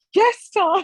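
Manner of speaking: very high, crying, tearful voice. Retelling answering Tom while crying: imitating own tearful answer. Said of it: "I'm still crying at this point".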